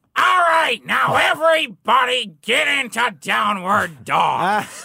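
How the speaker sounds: shrill, loud, jarring, high blasting voice. Retelling a yoga instructor's words to the class, in a Gilbert Gottfried voice. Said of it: "the instructor kind of sounded like Gilbert Gottfried".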